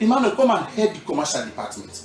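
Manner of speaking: ordinary talk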